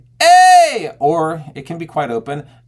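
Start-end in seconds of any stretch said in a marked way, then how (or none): 0.2-1.0 narrowed-throat closed belt on long "ay", very high, very loud. Showing a narrowed-pharynx belt sound: belt with narrowed pharynx. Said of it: "The pharynx can either be quite narrowed".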